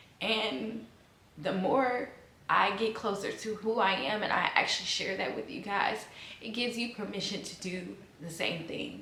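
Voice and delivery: speaking through tears, tearful, voice breaking. Sharing her family story with viewers, crying. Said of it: "I don't even know why I'm crying".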